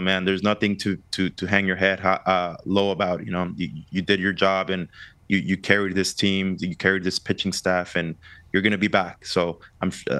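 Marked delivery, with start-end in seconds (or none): none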